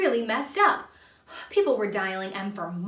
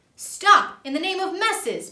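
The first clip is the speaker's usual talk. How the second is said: loud, high shouted line; 8 semitones higher, 5 dB louder than usual. Leaping from a police car and showing his badge, a man shouts. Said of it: "Bob shouted".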